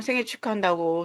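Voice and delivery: ordinary talk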